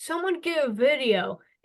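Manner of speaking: acted high-pitched yell. Retelling how the other speaker called for a video: imitating someone yelling. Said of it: "you yelled".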